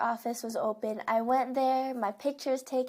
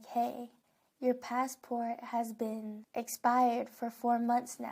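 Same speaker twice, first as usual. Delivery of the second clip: quiet, hushed, discreet half-whisper; 4 dB quieter than usual. Retelling what the lady checking them in said: retelling a half-whisper. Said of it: "she whispers to me like".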